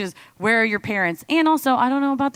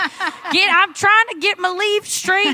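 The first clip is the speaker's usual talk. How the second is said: mock yelling, pretend and pitched higher; 8 semitones higher, 3 dB louder than usual. Joking about scolding kids who mess things up: mock yelling in the yard. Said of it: "rake and I'm yelling in the yard".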